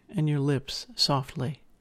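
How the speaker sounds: ordinary delivery, nothing marked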